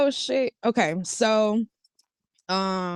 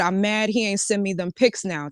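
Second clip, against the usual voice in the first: normal talking voice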